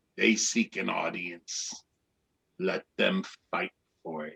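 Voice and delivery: quiet, deep, gravelly, rumbling dragon growl. Narrator voicing the dragon after the turtle's report, in a gravelly, low voice. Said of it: "the dragon says in a gravelly, low voice".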